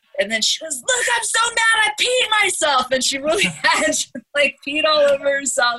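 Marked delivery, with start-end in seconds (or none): 0.8-2.9 put-on very high, frantic shrieking, losing control. Retelling how a guy's girlfriend lost her mind at the cops, mock screaming. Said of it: "she's just losing her mind and screaming at the cops".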